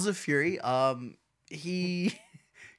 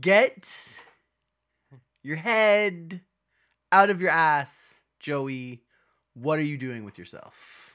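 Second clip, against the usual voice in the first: halting, quirky impression of an actor's voice. Tell Joey off while going for a bit of a Christopher Walken impression. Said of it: "I was kinda going for a walk in there".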